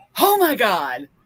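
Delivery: dramatic, expressive delivery with added inflection. Imitating an audiobook reader waking listeners up: imitating a reading with added inflection. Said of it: "he adds inflection to it".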